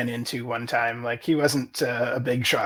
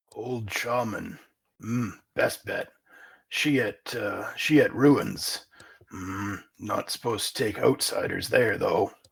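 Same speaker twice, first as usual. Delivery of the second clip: orc voice, much lower, quieter; 4 semitones lower, 3 dB quieter than usual. The orc scout Pug is asked about his tribe's elders, Pug orc voice. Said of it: "and it's not long before you come across an orc scouting party. / Okay, he pockets the gold piece and he laughs with his other orc scouts. / Okay, he pockets the gold piece and he laughs with his othe".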